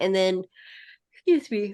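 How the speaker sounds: speaking mid-yawn. Explaining what happens during a game, yawning. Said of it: "sorry, yawning".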